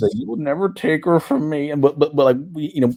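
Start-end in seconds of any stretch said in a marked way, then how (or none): 0.1-1.7 silly, dumb animated-sitcom character voice. Retelling a table reading of a movie line: Chris Griffin voice. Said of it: "with that Chris Griffin voice".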